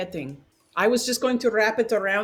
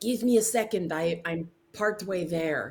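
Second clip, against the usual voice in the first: hushed, quiet, low kept-down murmur; 4 semitones lower, 3 dB quieter than usual. While another character cuts them free, a player's character speaks in a quiet voice. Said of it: "I will quietly say".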